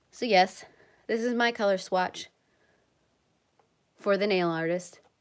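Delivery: breathless, out-of-breath, panting voice. Speaker back from running upstairs to fetch a color swatch, out of breath, panting. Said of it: "I don't want to like pant in your guys' ears".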